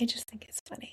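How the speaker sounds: soft, hushed, high-pitched whisper.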